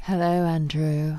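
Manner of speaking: sultry, seductive. Asked to say hello to Andrew in a real sexy voice, sexy voice. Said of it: "in a real sexy voice".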